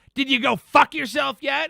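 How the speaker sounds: nasty, mean, taunting, shrill, high-pitched scream. Retelling a stranger's passing insult: imitating a mean tone. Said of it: "in, like, a mean way".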